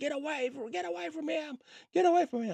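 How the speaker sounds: mock woman's voice, very high yelling. Retelling how a woman yelled during a confrontation: imitating her yelling. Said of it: "she starts yelling".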